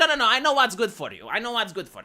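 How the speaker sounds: plain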